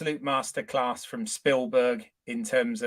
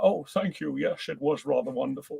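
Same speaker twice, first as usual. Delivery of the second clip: rough, creaky, edgy voice; 2 semitones higher, 4 dB quieter than usual. Retelling a film scene where the father answers: Sean Connery impression. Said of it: "it's a pound for every impression of Sean Connery".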